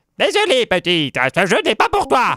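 put-on elderly woman voice, high with swooping tune. Retrying a character line after restarting: old woman voice. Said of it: "j'essaye de faire une voix de vieille".

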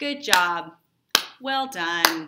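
very loud, slow, sarcastic tone. Summarizing a play, acting out one character congratulating another, retelling sarcastic congratulations. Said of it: "he's sarcastically congratulating him".

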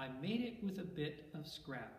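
usual speaking voice

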